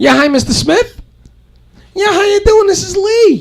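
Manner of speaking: very high, polite, formal voice.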